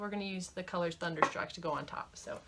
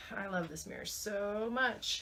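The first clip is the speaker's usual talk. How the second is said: mock-sincere tone dripping with sarcasm; 3 dB quieter than usual. Showing a makeup palette with a mirror in the center, sarcastic. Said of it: "she said sarcastically".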